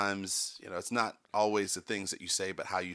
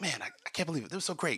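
fast, rapid-fire patter, words rattled off quickly; 8 semitones higher than usual. Imitating an investor drinking wine and gloating: Gary Vaynerchuk impression. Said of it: "You know how he talks".

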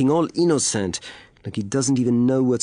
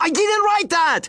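shrill, very high-pitched yelling. A soldier, already asked if he is shouting, denies writing the message: shouting. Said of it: "Shouting again".

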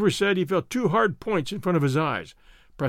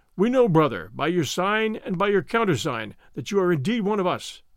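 ordinary delivery

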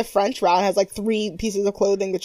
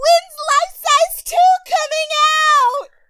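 sudden, very high-pitched, loud shout; 5 dB louder than usual. Speaker retells what Kyla yelled when told to yell something, retelling a yell. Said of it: "And then Kyla yells".

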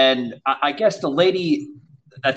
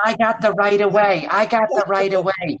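put-on high-pitched, tiny little old lady voice; 6 semitones higher than usual.

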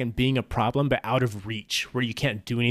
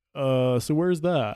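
mock fake-clueless, playing-dumb voice; 2 semitones higher than usual. Retelling what a trolling teammate said in a ranked game: imitating a troll playing dumb. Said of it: "he clearly knew more about the game than he was letting on".

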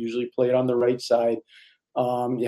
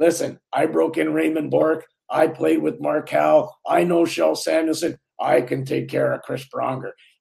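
big, rough, rasping, gravelly voice; 4 semitones higher than usual. Retelling the Beast's reply about rooming with Chris Pronger, in his big gravelly voice. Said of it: "the Beast had this big gravelly voice".

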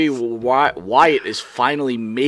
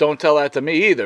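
usual speaking voice

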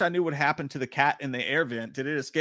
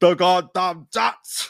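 loud, booming, bellowing monster voice; 4 semitones higher, 8 dB louder than usual. Host reads a viewer's comment aloud in his Frankenstein voice. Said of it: "in my Frankenstein voice".

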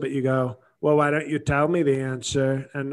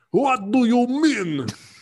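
put-on very high, slow, drawn-out Russian accent; 10 semitones higher, 4 dB louder than usual. Retelling what Putin asked, in a Russian accent. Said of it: "in his Russian accent".

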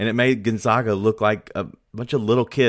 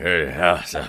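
put-on old man voice, pitched lower; 5 semitones lower than usual. Recounting a post-game sideline report, quoting him in his put-on old man voice. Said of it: "He tried to use his old man voice".

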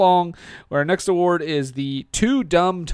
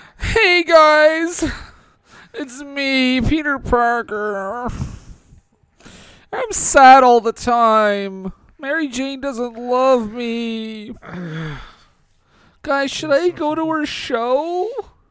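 very high, mopey whine, "me" stretched out; 9 semitones higher, 3 dB louder than usual. Presenting an award in a comedy bit: whiny Peter Parker voice. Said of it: "it's Peter Parker, uh, from Spider-Man three".

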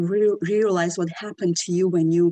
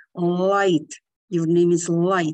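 mock anger, spoken through gritted teeth. Retelling how a man angrily gave the speaker a name: mock-angry, through gritted teeth. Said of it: "was like through his teeth".

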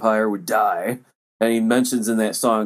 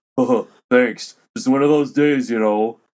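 weirdest voice ever. Retelling a backstage story, a man thanks a helper in the weirdest voice ever. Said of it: "the weirdest voice ever".

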